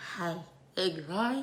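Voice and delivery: seductive voice. Coaching another speaker to repeat lines, demonstrating sexy talk. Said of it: "Now try a sexy talk".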